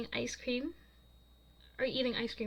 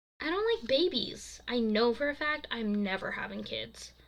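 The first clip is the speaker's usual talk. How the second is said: ordinary delivery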